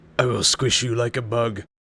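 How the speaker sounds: loud, threatening, menacing brute orc voice. Telling a scene where he faces a brute, voicing it in a threatening orc voice. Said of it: "That was as threatening as I can be in an orc voice".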